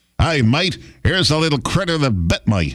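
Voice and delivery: put-on Australian accent. Reading out a news headline after saying it needs an australian accent. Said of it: "You got to say it in Australian accent".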